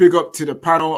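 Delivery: ordinary talk, nothing marked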